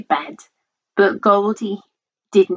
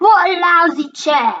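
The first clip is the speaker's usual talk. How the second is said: high-pitched, bellowing loud outburst; 9 semitones higher, 4 dB louder than usual. Reading a story aloud, the girl breaks a chair and swears, bellowing. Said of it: "She bellows".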